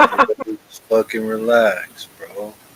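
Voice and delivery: animated delivery with swooping pitch. Retelling how Croms calms everyone after the market: imitating Croms. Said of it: "Croms comes in, it's like".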